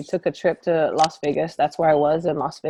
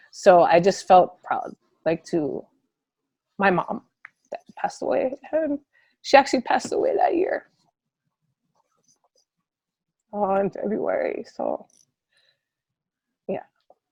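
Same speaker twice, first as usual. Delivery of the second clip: trying not to cry, holding back tears; 3 semitones higher than usual. A coach on a radio talk show recalls her mother who passed away, holding back tears. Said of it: "I'm gonna try to do this without crying".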